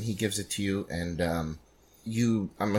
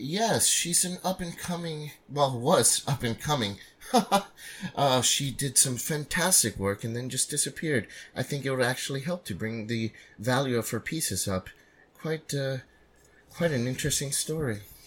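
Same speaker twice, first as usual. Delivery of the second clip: snooty, snobbish attendant voice, pitched higher; 4 semitones higher, 4 dB quieter than usual. Voicing a gallery attendant greeting a visitor: snooty attendant voice. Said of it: "the snooty attendant".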